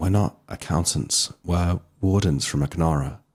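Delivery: voice dropped low. Stepping forward and taking a stranger's hand, answer them: lowered voice. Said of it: "I lower my voice and say".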